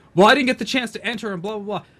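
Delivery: very loud, shrill, high griping tantrum. Retelling a mod's complaint about a giveaway, imitating an angry tantrum. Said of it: "threw, like, an absolute bitch fit because he's like".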